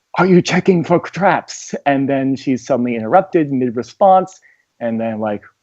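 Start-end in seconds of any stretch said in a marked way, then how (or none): 0.2-1.8 theatrical whisper. Asking a party member in character whether she is checking for traps: whispering. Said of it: "I was, like, whispering to Clarity".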